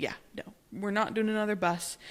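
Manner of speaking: ordinary talk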